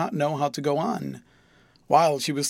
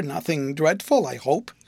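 plain

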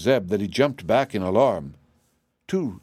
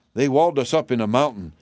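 ordinary delivery

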